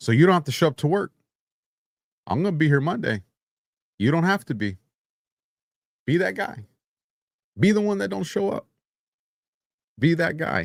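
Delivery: put-on calm menace. Imitating a Marine leader during a government shutdown: calm threatening tone. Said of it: "threat through calmness".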